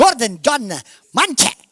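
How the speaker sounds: the name said with Italian accent. Showing how others might pronounce his name: italian accent on the name. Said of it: "They may say it in Italian".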